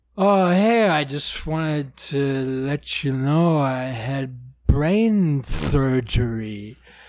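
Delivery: put-on slurred speech. Retelling a phone call after brain surgery, imitating slurred speech. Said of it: "he was literally slurring his words like that".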